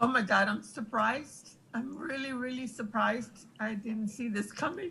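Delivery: surprised, fighting tears, near crying. Reacting with surprise to always being with them in this building, trying not to cry. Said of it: "I'm trying not to cry here".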